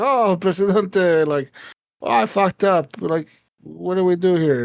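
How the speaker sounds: slow, drawn-out, dopey, dim-witted and confused-sounding voice. Imitating the game advisor Penultimo admitting he messed up: imitating Penultimo. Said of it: "he's like".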